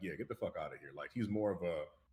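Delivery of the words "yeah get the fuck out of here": dismissive, impatient, no-time-for-this brush-off tone. Acting out a character's attitude from a trailer: imitating a dismissive attitude. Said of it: "type attitude".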